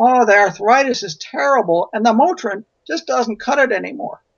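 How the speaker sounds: invented high-pitched woman's voice. Retelling a conversation, voicing Mrs. Johnson's answer in a made-up voice. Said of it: "I'm making the voice up".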